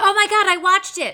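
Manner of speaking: very loud, high, thrilled and excited outburst. Talking about a Hulu sitcom they watched, the speaker reacts: excited. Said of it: "you sound kind of excited about that".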